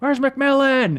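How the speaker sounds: high, slow yell. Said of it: "But I just yelled out".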